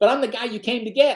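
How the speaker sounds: play-acted, high-pitched scream. Retelling a crew chief screaming at the pilot: imitating someone screaming. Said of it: "he's screaming at the pilot".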